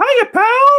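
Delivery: very high-pitched, loud voice. Wearing Mickey hands, speaking in a Mickey Mouse voice. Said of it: "He loves doing Mickey".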